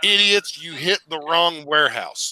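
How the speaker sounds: ordinary delivery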